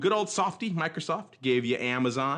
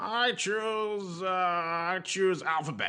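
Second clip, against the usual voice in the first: thin, tinny put-on voice, very slow and drawn out; 4 semitones higher, 4 dB quieter than usual. Speaker choosing for the audience, in a tinny Mark impression. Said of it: "did I sound tinny enough".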